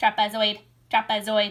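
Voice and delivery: mechanical, robotic alien voice. A kindergarten teacher says a shape's name the class way, in alien robot voice. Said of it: "we say it with like alien robot language".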